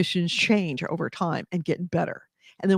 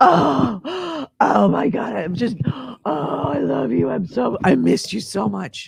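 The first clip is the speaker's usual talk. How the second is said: mock gasping, overjoyed dog voice, high and drawn out; 6 semitones higher, 3 dB louder than usual. Retelling how the dog greets them on the couch: imitating the dog's gasping joy. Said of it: "and she's like".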